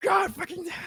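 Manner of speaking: high mock scream. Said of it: "and screams".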